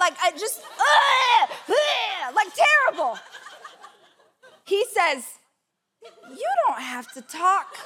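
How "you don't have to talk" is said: put-on worried, very concerned, cautious tone. Retelling a first kiss, quoting the partner: imitating a concerned tone. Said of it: "in a very concerned way".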